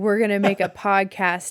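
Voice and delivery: ordinary delivery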